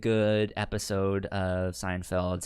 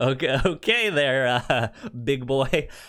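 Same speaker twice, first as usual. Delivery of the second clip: amused teasing voice, chuckling through the words; 4 semitones higher, 4 dB louder than usual. Retelling what a woman said to a man, imitating a chuckling tease. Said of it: "chuckles like".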